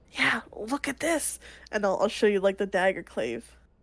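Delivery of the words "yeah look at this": hushed, slow, unhurried whisper. Speaking in character during the moot without interrupting it: whispering. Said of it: "whispering, 'cause, like, I don't wanna interrupt the moot".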